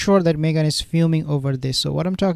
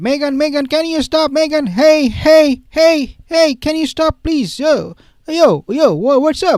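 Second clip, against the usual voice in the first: very high, loud, overfamiliar calling out; 10 semitones higher, 6 dB louder than usual. Retelling how paparazzi addressed someone: imitating paparazzi calling out. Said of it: "the way they were addressing Meghan".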